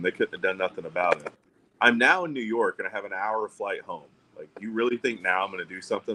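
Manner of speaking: ordinary talk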